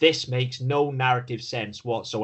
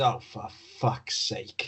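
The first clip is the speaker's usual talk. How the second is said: exasperated, fed-up, slow whisper; 5 dB quieter than usual. Retelling a character's line from a scene: imitating Harrison Ford exasperation. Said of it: "he pulls a full Harrison Ford and just goes".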